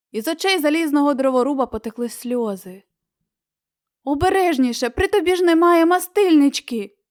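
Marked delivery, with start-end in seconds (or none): 4.0-6.8 high, scared, alarmed, frightened shout. Reading a fairy tale, the scarecrow warns the crying tin woodman; frightened shout. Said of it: "злякано закричав страхопуд".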